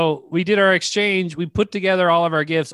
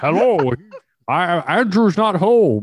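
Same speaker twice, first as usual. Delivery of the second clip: put-on Scottish movie-star voice; 3 dB louder than usual. Retelling an old answering machine greeting: Sean Connery impression. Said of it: "like Sean, Sean Connery".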